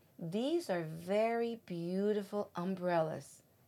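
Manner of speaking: ordinary delivery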